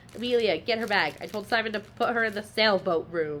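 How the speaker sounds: fast, rattled-off, rapid-fire delivery. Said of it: "her mom's just like".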